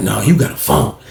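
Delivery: low, secretive, knowing, confidential insistence. Speaker retells a man insisting he has a phone: imitating a hushed voice. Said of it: "He was talking like this for nobody don't hear him".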